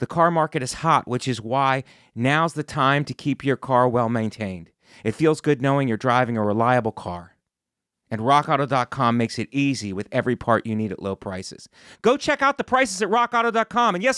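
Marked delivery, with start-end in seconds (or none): 12.0-13.9 shouting, higher pitch. Reading an ad and urging listeners to check prices: yelling. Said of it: "I'm yelling at you".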